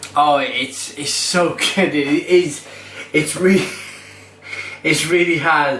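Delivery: words broken by light giggles. Reviewing a beer and apologising for giggling, giggling. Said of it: "I do apologise for giggling".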